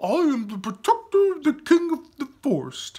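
beautiful, very high, puppy-like soprano voice. Reading a story, the floating simp answers a question: soprano puppy voice. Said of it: "in a beautiful soprano puppy voice".

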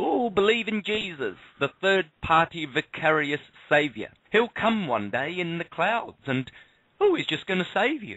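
passionate mockery. Addressing believers of various churches, passionate. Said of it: "You can hear the passion in my voice".

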